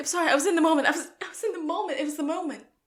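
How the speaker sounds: high, fast, swept-up, carried-away delivery. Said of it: "And Sean's like".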